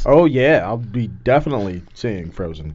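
dry sarcastic tone. Answering that a new trailer dropped for fans: sarcastic. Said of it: "sarcasm in your voice?".

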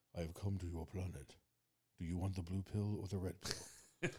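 low, deep, dramatic movie voice. Joking about who voiced a movie character: Morpheus voice. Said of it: "Morpheus is, is the voice there".

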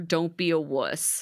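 ordinary talk, nothing marked

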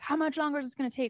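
put-on testy, exasperated, irritated and impatient voice. Retelling a show scene where a character yells at the nurse: imitating someone yelling irritably. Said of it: "he's yelling at the nurse".

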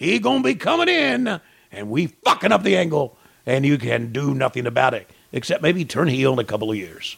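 put-on yelling Boston accent. Voicing a wrestler's promo threatening Hogan: Kevin Sullivan impression. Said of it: "Kevin's gonna finally talk".

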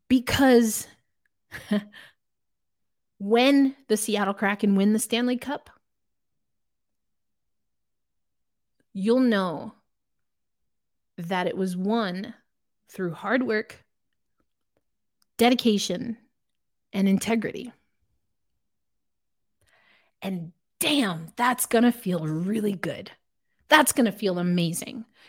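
getting emotional. Live ranter addressing Seattle Kraken fans about winning, getting emotional. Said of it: "I'm getting emotional here".

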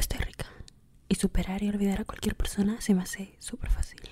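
breathy, whispered, seductive voice. Showing the listener what to say to the mirror: seductive voice. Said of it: "Así con esa voz seductora".

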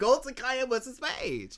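put-on near-crying voice. Retelling repeating one answer to questioning friends: retelling holding back tears. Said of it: "I'm trying not to cry at this point".

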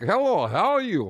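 put-on Eastern European accent. Speaker demonstrates a man's greeting while discussing accents, Eastern European accent. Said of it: "I don't think Eastern European helps you".

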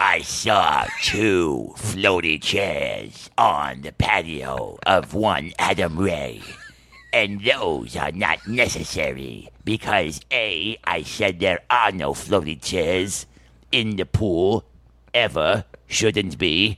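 sinister cartoon villain voice. Giving a woman's words in a retelling: evil Disney villain voice. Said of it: "I'm going to give her an evil Disney villain voice".

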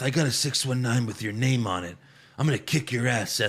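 hushed, furious half-whisper. Retelling a promo threat to Seth: imitating Rey Mysterio half-whispering. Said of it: "Rey Mysterio's whispering this whole promo".

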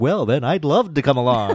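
dripping sarcasm, sarcastic, mock-polite tone. Recounting a scene between two characters, quoting one's reply: retelling a sarcastic remark. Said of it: "that complete sarcastic".

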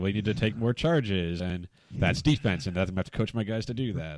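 biting, grudging, bitter sarcasm. Retelling a coach telling his players to take charges: imitating Sean Miller's sarcasm. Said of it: "sarcastic Sean Miller".

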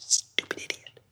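muttered under the breath. Retelling a tense family dinner, the speaker re-enacts muttering at the father under the breath. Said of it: "I'm just under my breath".

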